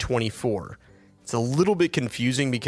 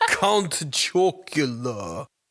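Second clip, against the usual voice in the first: silly, goofy put-on cartoon voice; 2 semitones higher than usual. A host promising funny voices on the episode, Count Chocula funny voice. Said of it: "Can I do funny voices?".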